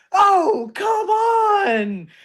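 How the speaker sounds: high, loud, excited call like a hyped announcer.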